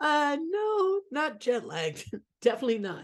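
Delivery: a little scratch in the throat. Answering whether still jet lagged from a uk trip, with a slight scratch in the voice. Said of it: "You got a little scratch in your voice".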